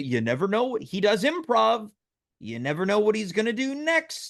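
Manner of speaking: put-on patronizing, slow, over-explaining tone. Repeating another speaker's remark back to them: imitating a patronizing tone. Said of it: "that felt a little patronizing".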